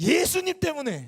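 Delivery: shrill, very loud, high-pitched furious outburst. Retelling how a pastor, his anger bursting, answered a young man: retelling a furious answer. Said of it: "분노를 쏟아보면서 대답을 했답니다".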